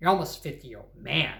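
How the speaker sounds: harsh, heavily emphasized delivery. Quoting a mother's words the ugly, emphasizing way she says them. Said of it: "she's saying things in an ugly way, emphasizing ... like that".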